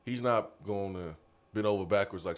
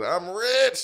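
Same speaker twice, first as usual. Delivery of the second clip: mock gloating, high-pitched and loud. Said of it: "Brian Kelly said".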